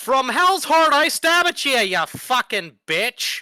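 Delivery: shrill, full-throated scream at the top of lungs. Voicing a character leaping out of the darkness: shouting at the top of his lungs. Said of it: "at the top of his lungs, he's shouting".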